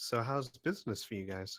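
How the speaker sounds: a little hushed. Game narrator voicing a character's question to the group, a little more quietly. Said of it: "a little bit more quietly".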